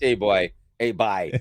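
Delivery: slow, unhurried Newfoundland accent. Showing how people in Newfoundland talk, in a Newfoundland accent. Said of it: "if you go to Newfoundland, eh, that they're they're talking like this".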